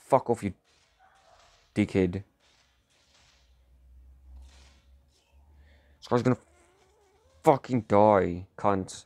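getting very angry. Playing a game and swearing at another player, getting so mad. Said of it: "I'm getting so mad".

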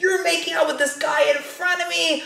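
mock very high-pitched, shrill accusing scream. Retelling how an ex screamed at the speaker, imitating someone screaming. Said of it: "this dude is screaming at me".

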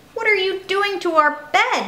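high, angry shout. Narrator reading a story where six cats find Kip: angry shouting. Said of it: "shouted the 6 angry cats".

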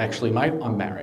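ordinary talk, nothing marked

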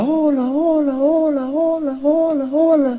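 echo-like voice, high and fading.

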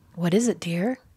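plain

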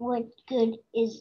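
ordinary delivery

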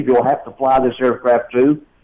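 ordinary delivery

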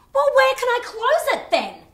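shouting. A woman at the bank argues with the employee who addresses her as madam: yelling. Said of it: "You're not supposed to yell at me".

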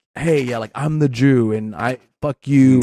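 ordinary talk

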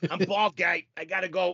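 put-on Boston accent. Repeating the other speaker's boston phrase back, boston accent. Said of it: "In Boston, our phrase for that is".

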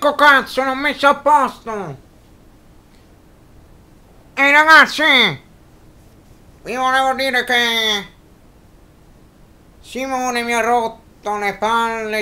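booming, very loud puppet voice yelling, ranting. A ventriloquist's puppet, Zio Johnny, talks to the audience: Zio Johnny puppet voice. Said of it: "Novembre 2011,si ripare un altro grande anno di magia,cartomagia e di ventriloquia da parte di [name]([name] fanelli).Il simpaticissimo zio jonny che ormai accompagna il grande mago da 2 anni,si trova alle prese c".

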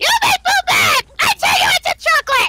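loud, very high, belted cartoon villain voice. Asked who he's impersonating, answering with a Fat Majin Buu impression. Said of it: "Fat Majin Buu impression".

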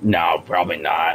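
exasperated, fed-up, annoyed and irritated tone. Echoing his reply just heard: imitating an annoyed answer. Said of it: "His answer just sounds so annoyed".

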